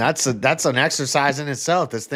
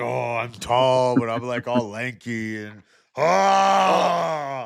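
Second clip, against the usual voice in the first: slow mocking drawl, ah stretched out long. Teasing a friend by mimicking him: mocking imitation of a friend. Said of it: "You're like a".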